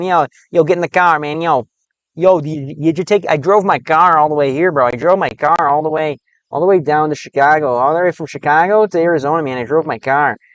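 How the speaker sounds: exaggerated put-on Chicago accent. Showing what a Chicago accent sounds like, talk in an exaggerated Chicago accent. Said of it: "talk like this, man".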